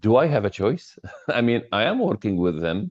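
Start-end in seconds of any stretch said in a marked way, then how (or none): 0.0-1.0 quick, short, sarcastic delivery. Giving an example of how team members might answer, quoting a sarcastic reply. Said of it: "would be sarcastically".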